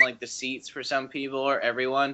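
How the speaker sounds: ordinary talk, nothing marked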